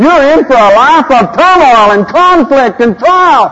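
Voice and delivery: loud, high, stern preacher-style proclamation.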